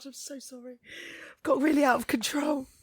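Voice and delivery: talking through laughter. Apologizing after a joke, laughing while talking. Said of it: "I'm laughing so much".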